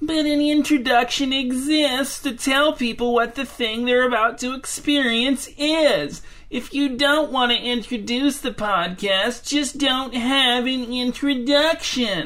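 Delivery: mock high, whiny nagging complaint at its absolute worst. Speaker mimics the person they are talking to, imitating someone at their whiniest. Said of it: "my impression of you at your absolute whiniest".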